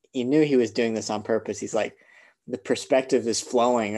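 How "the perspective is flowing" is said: ordinary delivery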